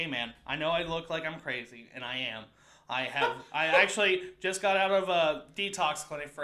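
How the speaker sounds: plain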